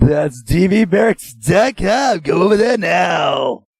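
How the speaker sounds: fake small raspy ad-read voice, drawn out. Plugging the website one last time, put-on raspy voice. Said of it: "You like that little raspy voice that I done?".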